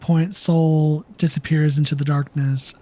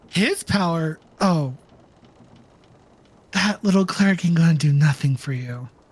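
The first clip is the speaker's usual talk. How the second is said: put-on demon voice. Game master voicing a devoured demon mocking a cleric: voicing the demon Tulamash. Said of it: "you hear another voice that goes".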